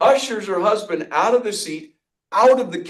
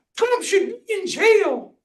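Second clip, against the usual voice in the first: very high, shrill screaming outburst. Retelling what a woman two tables away screamed out: imitating a woman screaming. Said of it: "she just screams it out".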